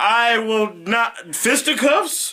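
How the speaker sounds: put-on high, slow, quavering voice of a nervous old man.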